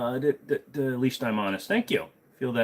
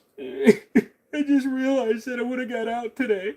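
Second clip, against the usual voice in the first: mock crying old man speech, higher; 13 semitones higher, 3 dB louder than usual. Telling a joke, the old man's punchline: imitating a crying old man. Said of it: "Why are you crying?".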